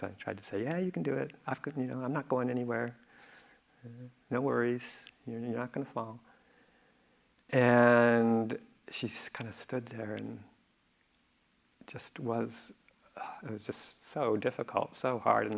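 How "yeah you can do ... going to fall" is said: put-on reassuring tone, faster. Retelling calming someone afraid to fall, retelling a reassuring voice. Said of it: "in my best reassuring voice".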